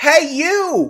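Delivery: mock very high call. Retelling trying to get a stranger's attention: imitating calling louder. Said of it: "a bit louder this time".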